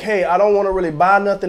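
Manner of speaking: normal talking voice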